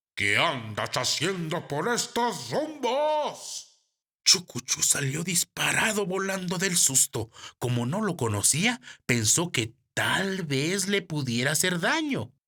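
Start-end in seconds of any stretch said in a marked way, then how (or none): 0.2-3.8 ugly, hideous crow voice, rumbos drawn out. Reading a story aloud, voicing an evil-looking crow's question: horrible voice. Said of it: "le preguntó con voz horrenda".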